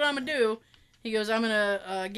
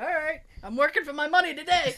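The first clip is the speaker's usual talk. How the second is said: acted laughing speech, much higher pitch; 5 semitones higher than usual. Retelling what a man said once he started laughing, retelling laughing while talking. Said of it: "and he started laughing".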